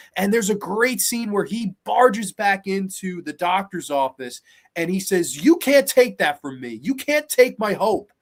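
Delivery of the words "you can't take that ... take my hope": emotional, worked-up, raised voice. Retelling a film scene where a man barges into a doctor's office, imitating an emotional outburst. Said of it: "he gets so worked up and emotional".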